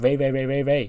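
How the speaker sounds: loud calling out.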